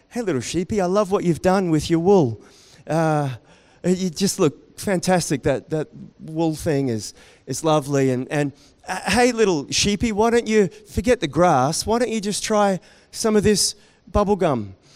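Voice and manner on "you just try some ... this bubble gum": ordinary talk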